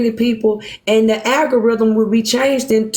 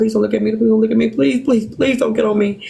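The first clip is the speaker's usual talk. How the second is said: put-on anxious, rushed, nervous repeated pleading. Retelling sitting on buses with a stomach in knots: imitating own past pleading. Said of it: "praying they don't get to me".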